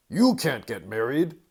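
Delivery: frightening, spooky, menacing voice. Reading a story aloud, the narrator voices the stink bug in a scary voice. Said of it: "Said a scary voice".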